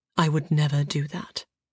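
softly spoken. A narrator reads a man's reply to a woman's confession: quiet reply. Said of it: "he replied quietly".

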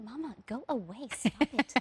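slow, hushed, embarrassed little half-whisper. Retelling what a two-year-old said when embarrassed: imitating a half-whisper. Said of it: "whispering to me".

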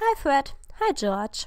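dryly tossed-off, loud and swooping. Reading a first-person story aloud, the narrator greets two brothers: dry. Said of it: "antwortete ich trocken".

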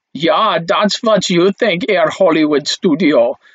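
bad put-on German accent, done badly. Explaining post-war film history, voicing the German studio answering Hollywood, UFA in a German accent. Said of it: "that's my best German accent".

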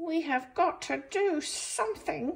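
very high-pitched shout. Reading a story aloud, the birds react to Bob missing Bat; shouted. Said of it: "shouted the birds".

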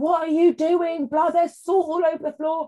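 fiery, shrill shouting, very high pitch. Retelling how her AR came out shouting at Lulu, imitating someone shouting. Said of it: "she started shouting at Lulu".

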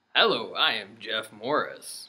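deep, soft radio announcer voice. Introducing himself as jeff morris at the show's start: announcer voice. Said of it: "Are you using your announcer voice?".

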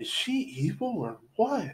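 slow, high, hushed half-whisper. A narrator reads a character asking the others a question, half-whispering. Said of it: "Whispered Julie".

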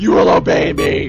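rough, creaky, rasping demon voice. Gamer voices an animatronic that is trying to kill them: Max demon voice. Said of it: "Max turned into a demon voice".

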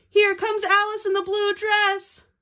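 shrill, high, very loud shouted call. Narrator reading a story, a voice Marsha hears: yelled. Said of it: "heard a voice yell".

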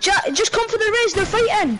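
high, urgent calling voice.

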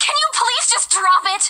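loud yelling, shouting. Pressed again about what is wrong, finally yelling: yelling. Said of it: "I didn't mean to yell".

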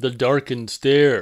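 ordinary delivery

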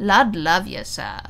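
muttering with good humour, good-natured. An Englishman turning leisurely away from a young man, muttered good-humouredly. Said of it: "he muttered good-humouredly".

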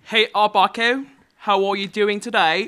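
loud, hammed, bad fake British accent. While playing a game, greeting another character in a crappy British accent. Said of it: "we usually play this game using crappy British accents".

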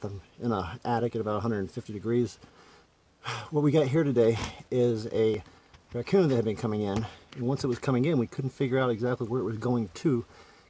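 talking slightly winded, a little out of breath. Filming himself in a hot attic about a raccoon, a little out of breath. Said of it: "I'm a little out of breath".

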